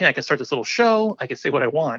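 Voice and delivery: ordinary talk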